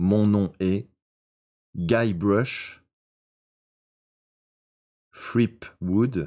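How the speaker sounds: slow, deliberate, each word spaced out carefully. Repeating a name slowly during a dictation: slow, deliberate pace. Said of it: "Je répète lentement. / là je le dis lentement".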